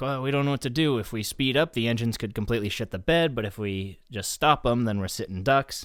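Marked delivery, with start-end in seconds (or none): none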